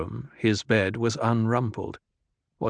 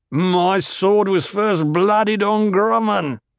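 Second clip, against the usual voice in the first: put-on very high-pitched, loud, drunken bellowing roar; 9 semitones higher, 5 dB louder than usual. A drunk man lifts his face toward the ceiling and lets out a drunken bellow.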